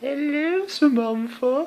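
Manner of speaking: very high, creepy little puppet voice. Retelling creeping out Samantha with a panda hand puppet: creepy panda puppet voice. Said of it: "make it all creepy and going".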